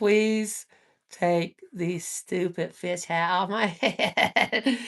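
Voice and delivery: speaking in a cat's voice. Reading a card and voicing a cat shown on it: voicing a cat. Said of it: "That cat's like".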